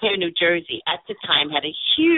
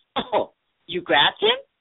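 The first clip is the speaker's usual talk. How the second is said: put-on, with a giggle in it; 3 semitones higher than usual. Speaker retells what the cop said during her arrest: imitating a cop's giggling voice. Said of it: "with a giggle in his voice".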